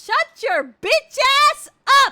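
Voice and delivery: very loud, very high, shrill screaming. Speaker who warned listeners she is loud, snapping back at someone, yelling. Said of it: "The yelling's fine".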